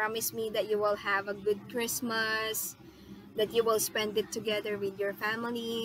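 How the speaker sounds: plain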